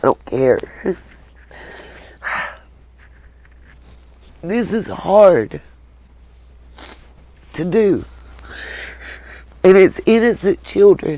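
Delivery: tearful. A youtube creator speaks to viewers about money, crying. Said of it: "I'm crying".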